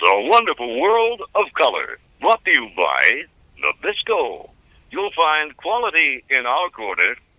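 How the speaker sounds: put-on big, swooping, sing-song old-fashioned announcer voice. Recalling a childhood television announcer, Dick Wesson announcer voice. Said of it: "old-fashioned Disney announcer voices".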